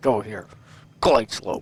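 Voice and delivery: firm, authoritative tone. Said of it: "You gotta pin it down and say".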